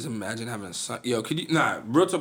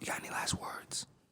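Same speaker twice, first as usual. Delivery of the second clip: spooky, creepy, very soft whispered voice. Asking for last words before ending: mock creepy voice. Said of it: "you sound creepy as fuck".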